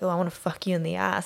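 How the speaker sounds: ordinary delivery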